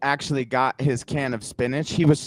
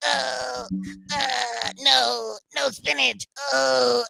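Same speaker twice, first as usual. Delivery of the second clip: put-on high, slow, drawn-out crybaby whimper like a bawling toddler; 10 semitones higher, 3 dB quieter than usual. Retelling a scene where a scolded son suddenly becomes a little kid; Robin Williams crybaby voice. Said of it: "goes into like this little crybaby kind of voice".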